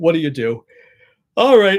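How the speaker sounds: yawning while speaking. Speaker talking to you guys, yawning while speaking. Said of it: "I've got to stop yawning at you guys".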